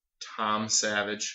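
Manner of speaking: slow, doubtful delivery.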